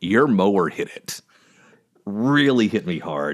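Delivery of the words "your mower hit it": put-on flat, deadpan delivery. Recounting a scene where a truck gets hit, the speaker quotes Bobby deadpanning. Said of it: "And Bobby just deadpanning".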